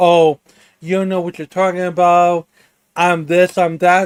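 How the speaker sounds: ordinary talk, nothing marked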